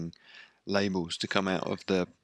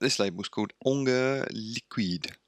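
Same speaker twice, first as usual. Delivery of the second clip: bad, mangled, terrible put-on French accent; 4 semitones higher than usual. Show host naming a record label, in a terrible French accent. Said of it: "That's my terrible French accent for you".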